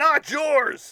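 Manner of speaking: very loud, very high-pitched voice. Recalling a voice you heard while cleaning the back bedroom: loud voice. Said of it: "I hear in a loud, audible voice".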